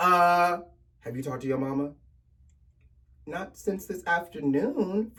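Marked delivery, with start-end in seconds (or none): 1.0-1.9 very deep, grave, grim-reaper low voice. Acting out someone whose voice suddenly drops an octave mid-question: very deep voice. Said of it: "they go from their octave to the octave of the Grim Reaper of Death".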